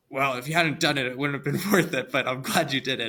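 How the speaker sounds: cranky, sour, grumpy delivery. Retelling what he said after she finished a long climb: imitating grumpy Jeff. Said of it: "in his like grumpy Jeff voice".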